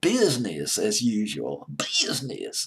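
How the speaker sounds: heavy put-on Southern US drawl, slow and swooping. Pronouncing an album title in an exaggerated Southern US accent. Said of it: "the southern accent would be".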